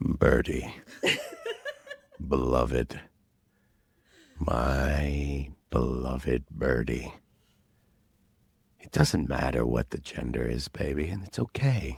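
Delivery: put-on deep voice, very low and soft. Prompted to use his deep voice, speaking to Birdie in a deep voice. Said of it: "deep voice of yours".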